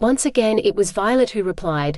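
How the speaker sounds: ordinary delivery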